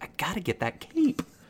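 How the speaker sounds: high, muttered whisper under the breath. Narrating a game scene, the speaker voices a character muttering to himself, whispering under his breath. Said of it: "or whisper under his voice".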